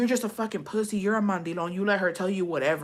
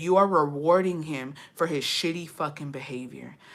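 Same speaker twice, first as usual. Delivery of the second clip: enraged, furious, raging outburst, letting rip; 4 semitones lower than usual. Recounting raging at a man who gave someone a beer, retelling a furious rant. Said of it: "That made me rage the fuck out".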